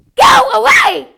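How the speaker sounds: very high, very loud, shrill, strident chest-voice shout. Showing an audience how voice quality changes, the speaker shouts: shrill chest-voice shout. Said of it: "I'm going to use my chest voice".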